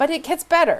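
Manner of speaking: very high, loud, openly sarcastic. Explaining a company's falling share price and messy backstory: sarcastic. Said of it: "I'm saying that sarcastically".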